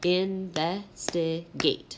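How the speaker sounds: investigate, syllable by syllable with short pauses. Teaching the syllables of investigate, with short pauses between each syllable. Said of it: "you can hear I kind of like take pauses almost".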